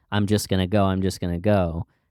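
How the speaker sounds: ordinary delivery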